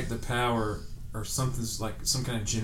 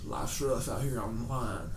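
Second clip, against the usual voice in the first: bad, terrible fake put-on country accent; 4 dB quieter than usual. Quoting a man he remembers, the speaker mimics him: terrible country accent. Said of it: "he has like a terrible like country accent".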